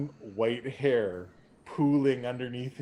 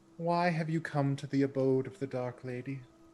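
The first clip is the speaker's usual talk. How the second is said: put-on girlish, young teenage girl voice; 2 semitones higher than usual. As the doors open on their own, voicing who the players hear: young girl's voice. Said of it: "what sounds like a like a young girl's voice".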